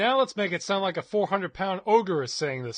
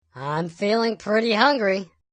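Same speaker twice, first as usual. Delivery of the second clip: loud voice shifted toward an elf; 5 dB louder than usual. Previewing a voice setting, trying the opposite direction with an elf voice. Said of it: "sound more like an elf".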